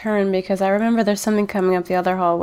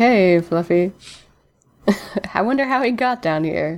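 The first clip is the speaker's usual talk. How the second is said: smirking delivery. Role-playing their character speaking to another player; smirking. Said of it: "smirk at you and be like".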